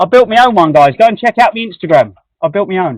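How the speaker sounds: loud full shout. Speaking to viewers with a microphone on him, shouting. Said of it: "I'm shouting".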